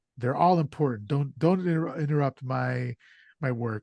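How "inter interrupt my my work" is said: ordinary talk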